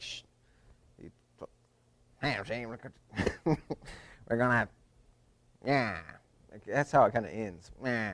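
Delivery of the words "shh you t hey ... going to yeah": put-on gruff comedian voice. Showing another speaker an impression on request: Colin Quinn impression. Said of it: "Colin Quinn, and Colin Quinn's kinda like".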